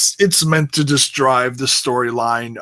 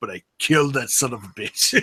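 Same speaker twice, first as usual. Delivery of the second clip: put-on muttering under breath, mock aside; 5 dB quieter than usual. Imagining what a man says while offering condolences: mock mutter under breath. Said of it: "it's almost like he says under his breath".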